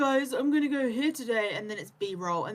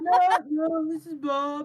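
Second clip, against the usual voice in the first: put-on elderly man's voice; 4 semitones higher, 4 dB louder than usual. Retelling how someone answered the phone pretending to be someone else: fake old man voice. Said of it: "in like an old man voice".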